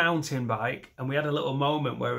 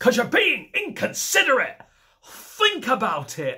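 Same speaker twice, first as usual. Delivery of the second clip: mock strict teacher voice, very high, stern, full-volume shout; 11 semitones higher, 6 dB louder than usual. Speaker retelling what they shouted at someone, retelling a full-volume shout. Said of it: "top full volume, like a substitute geography teacher".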